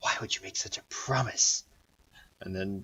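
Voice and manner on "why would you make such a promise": soft, hushed whisper, barely voiced. Voicing a disgruntled character stepping closer to a player: whispering. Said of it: "kind of whispers".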